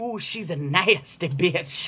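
put-on low, soft old granny voice. Repeating what she heard spirit say, in an old granny voice. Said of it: "Why is it gotta be in the granny voice?".

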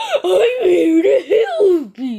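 booming slowly with swinging pitch. As Bendy, attempting a hard-to-do impression of Puppet: Puppet impression. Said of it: "Let me try to do my puppet impression".

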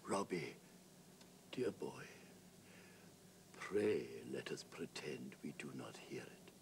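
very feeble whispering. A dying man speaks to Robbie at his bedside on his last morning, in a very weak whisper. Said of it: "In fact, on the morning of the day he died, he beckoned [name] to his bedside. And in a very weak whisper, he said, ... And in a very weak whisper".

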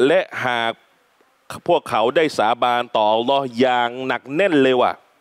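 ordinary talk, nothing marked

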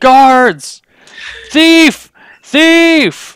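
very high, shrill shriek with thief drawn out. Voicing a man who turns and sees a hand on his purse, yelling. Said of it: "and starts yelling".

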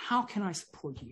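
soft gentle voice.

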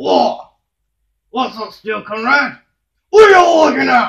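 aggressive character voice. Socko, the show's first guest, answers the host: aggressive Socko voice. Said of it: "don't be so aggressive to the audience".

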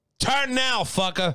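thick South Philly accent. Comparing regional accents, demonstrating a deep South Philly accent. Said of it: "deep South Philly accent".

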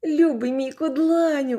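very high, overjoyed, joyful yell. Reading a story: Mowgli, seeing the bear open his eyes, yells joyfully. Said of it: "заволав Мауглі".

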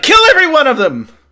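very loud, very high-pitched, shrill hollering. Retelling what a man says as he comes up and calls out to you, calling out. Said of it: "he calls out to you".

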